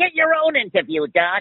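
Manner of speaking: very high, offhand, wisecracking cartoon rabbit voice. During an interview about cartoon voice work, Bugs Bunny voice. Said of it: "Are we allowed to use this voice here?".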